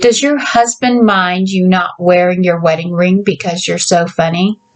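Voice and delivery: plain reading voice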